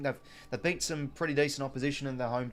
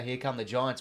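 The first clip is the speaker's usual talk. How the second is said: ordinary talk, nothing marked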